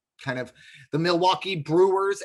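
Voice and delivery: Brewers with strong emphasis on the B. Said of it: "emphasis on the B".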